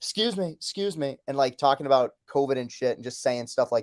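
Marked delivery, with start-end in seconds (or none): 0.0-1.2 very high-pitched, drawn out. Retelling a friend's impression for the others: Trump impression. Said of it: "the best Trump impression I've ever heard".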